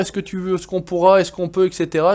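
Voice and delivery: ordinary delivery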